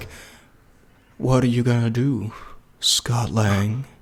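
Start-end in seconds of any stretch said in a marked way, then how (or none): 1.2-3.8 slow, deliberate, unhurried, drawn-out delivery. Mocking the movie villain who always talked so slowly: slow-talking Kang voice. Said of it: "he talked so slowly".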